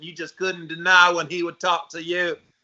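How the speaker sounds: put-on Southern accent. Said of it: "that Southern accent that he talked like this".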